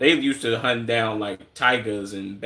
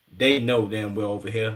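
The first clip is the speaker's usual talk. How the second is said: ordinary delivery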